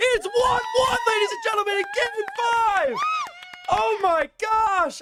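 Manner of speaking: very high-pitched, thrilled, excited screaming. Commentating a close match live for viewers: screaming. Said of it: "because I'm screaming a lot".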